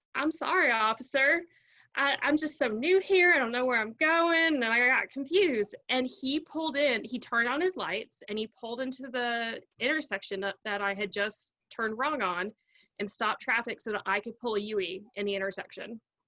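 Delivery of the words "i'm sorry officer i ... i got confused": put-on thick, over-the-top Southern accent, pitched up. Retelling apologizing to a police officer after a wrong turn: exaggerated Southern accent. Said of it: "said in my most exaggerated Southern accent".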